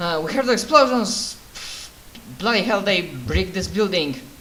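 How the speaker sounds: high yelling shout. Voicing soldiers on the radio after explosions: shouting over the radio. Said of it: "start shouting".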